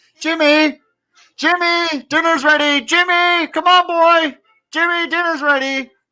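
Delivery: very high-pitched hollering yell. A man walks out of a nearby building calling a boy to dinner, yelling. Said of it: "he starts yelling".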